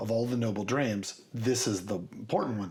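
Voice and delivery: ordinary talk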